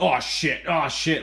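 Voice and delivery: huffed, slow, grumbling swearing. Retelling an argument with a man, imitating huffing under breath. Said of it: "you huffing under your breath".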